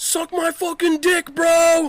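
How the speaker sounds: shrill, very loud, drawn-out, full-lung scream. Answering what to scream from a rooftop to a crowd: screaming at top of lungs. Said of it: "What would you scream out loud?".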